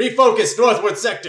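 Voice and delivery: loud, high-pitched shouted yell. Voicing a commander closing the comm: yelling an order. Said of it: "yelling out".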